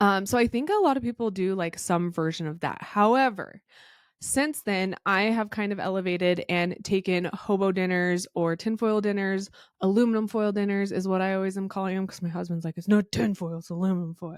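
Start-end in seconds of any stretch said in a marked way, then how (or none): 12.8-14.4 overly mean, bad, mean-sounding voice. Retelling a husband's correction about foil, bad impression of Cody. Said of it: "That was a really bad impression of Cody".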